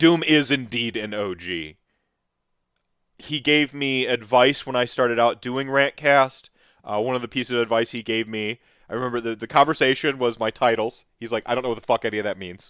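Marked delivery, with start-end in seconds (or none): 11.5-12.7 put-on deadpan delivery, much faster. Recalling advice he got on starting Rantcast, imitating Doom's deadpan. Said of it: "Just in that perfect deadpan way".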